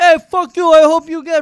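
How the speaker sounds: very loud, high, shrill, screaming taxi driver voice. Talking with another speaker, the speaker imitates a taxi driver, imitating a yelling taxi driver. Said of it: "that's something a taxi driver would yell".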